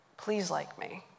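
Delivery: very quiet, close half-whisper. Speaker retells how a man leaned in really close to them, in a half-whisper. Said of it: "and he whispers".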